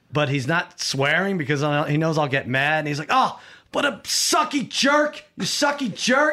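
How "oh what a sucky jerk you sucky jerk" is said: play-acted, very high-pitched, slow, fuming angry tantrum. Retelling a son's outburst over fantasy football: imitating someone getting mad. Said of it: "He was, like, getting so mad".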